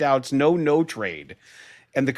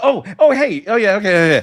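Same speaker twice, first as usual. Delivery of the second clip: loud, high, dismissive babbling delivery; 5 semitones higher, 6 dB louder than usual. Retelling a coach's quick drive-by handshake: dismissive Ben Johnson imitation. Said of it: "Ben does a".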